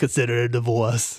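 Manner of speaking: low, deep put-on Austrian accent. Quoting the Total Recall breakup scene, Arnold Schwarzenegger impression. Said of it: "really shitty impersonation".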